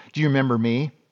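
put-on grumpy woman's voice. Retelling a funeral meeting with an old school teacher: imitating a grumpy lady. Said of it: "this lady's just grumpy".

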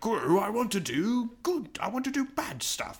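put-on high, wide-swinging, swooping British accent. Retelling a movie subplot: imitating Doctor Nefario, British. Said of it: "I think he's British".

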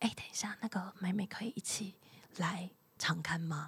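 quiet, soft, hushed, low-key voice. Retelling asking a question quietly before recording: retelling own quiet ask. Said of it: "我就讲得很小声".

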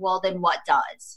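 ordinary delivery

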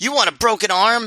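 high-pitched mock yelling. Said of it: "he yells".

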